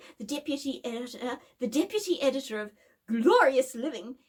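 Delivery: ordinary delivery, nothing marked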